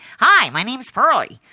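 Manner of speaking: very loud, high, belted American accent. Recalling how Pearlie sounded in the co-produced TV series: Pearlie's American accent. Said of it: "Pearlie ended up with an American accent, like a kind of".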